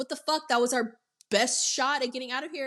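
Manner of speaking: furious, fed-up angry outburst. Retelling a movie scene where Larry turns on Adam: imitating Larry angry at Adam. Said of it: "Larry gets mad at Adam".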